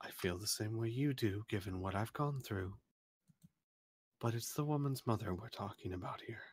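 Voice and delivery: very quiet, low, hushed under-the-breath voice. Player voicing a character who speaks to a companion in a low voice. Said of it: "she kind of says in a low voice".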